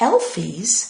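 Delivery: ordinary delivery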